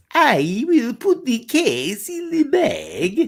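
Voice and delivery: very high, very slow swooping sing-song, every word stretched. Acting out an actor's audition line on an English accent: John Malkovich impression. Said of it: "that was my impersonation of, um, John Malkovich".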